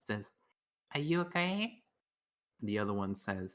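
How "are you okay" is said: tiny, small, wee, high voice. Telling a joke where one horse asks the other a question: tiny voice. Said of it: "one of them says in tiny voice".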